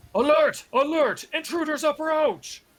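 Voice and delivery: shrill, very high, alarmed shout. Narrating a scene, voicing the alarm the players hear echoing down the hall: shouting an alarm. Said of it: "being shouted in Dwarvish".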